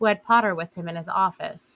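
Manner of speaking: plain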